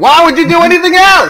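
very high, loud yell. Parodying a credit card ad, the speaker imitates Samuel L. Jackson yelling. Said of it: "Samuel Jackson yelling at you".

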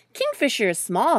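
ordinary delivery

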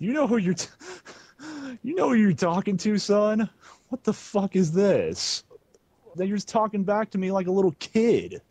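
high-pitched, angry, mad scolding tone. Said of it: "Daddy, you sound mad".

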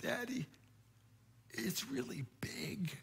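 tiny, hushed whisper full of awe. A father retells his son's words at the killer whale tank, retelling a child's awestruck whisper. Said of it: "he whispered to me in this little awestruck voice".

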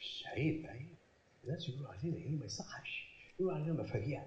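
low, soft, hushed scolding.

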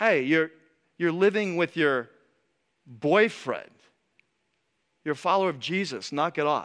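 ordinary talk

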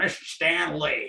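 slow, grand, drawn-out New York style delivery. Recalling the voice that opened the cartoons: Stan Lee's New York voice. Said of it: "this great New York voice coming on going".

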